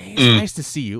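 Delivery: hushed whisper. Retelling how a character greets someone in a loud bar: imitating someone whispering. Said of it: "he's, like, whispering".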